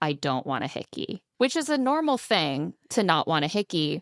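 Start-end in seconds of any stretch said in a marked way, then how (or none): 0.0-1.2 level, firm, flat, no-nonsense delivery. Retelling what a contestant said during a game: imitating a firm, flat statement. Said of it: "says very firmly and flatly".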